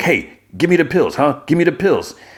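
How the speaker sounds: put-on yelling. Retelling a scene where a bloodied man demands pills: imitating someone yelling. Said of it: "he starts, like, yelling and, and cursing".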